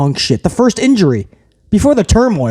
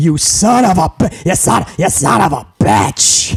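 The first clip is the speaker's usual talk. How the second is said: stuttering character voice, stumbling over the words. Recapping a wrestling match moment, in Vince McMahon voice. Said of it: "I can't say that without Vince McMahon's voice".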